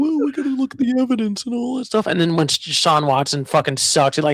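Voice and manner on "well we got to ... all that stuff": mocking voice with pitch lifted up. Retelling what everyone said about a player: imitating fans. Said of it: "everyone was like".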